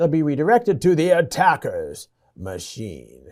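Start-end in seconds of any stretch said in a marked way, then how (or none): 0.9-3.3 sinister, scheming, swooping evil villain voice. Lecturer explaining a network attack, voicing the attacker in an evil villain voice. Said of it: "I had to say that in the evil voice".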